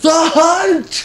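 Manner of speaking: high, yelled battle cry.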